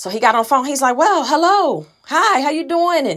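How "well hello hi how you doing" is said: put-on, eager, excited, drawn-out high hello. Retelling a father's answer on the phone: imitating an excited greeting. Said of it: "all excited to talk and everything".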